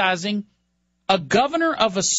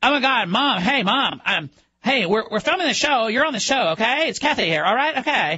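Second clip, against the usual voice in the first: mocking valley-girl style talk. Mocking how a critic talks on her reality show: imitating Kathy Griffin's way of talking. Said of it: "that stupid way she talks".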